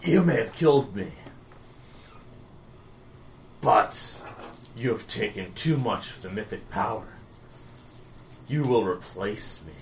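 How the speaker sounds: hushed, whispered last-breath dying voice. A game master voices a slain foe addressing the players, speaking with his dying breath. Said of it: "And with his dying breath".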